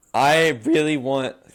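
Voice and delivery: loud voice crack in the middle of a word. Introducing the channel's plans to viewers, the speaker's voice cracks mid-sentence. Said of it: "voice crack".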